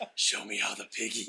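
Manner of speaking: hushed, whispered speech. Retelling a scene where he just whispers the line, whispered line. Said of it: "he just whispers it".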